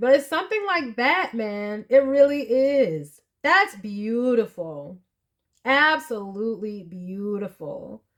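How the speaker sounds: teary, fighting back tears, stretching out "is". Moved by something beautiful, the speaker keeps talking while teary-eyed, holding back tears. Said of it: "but I'm getting teary eyed".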